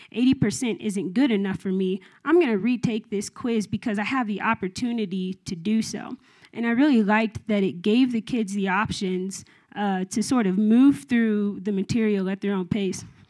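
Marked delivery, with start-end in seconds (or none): none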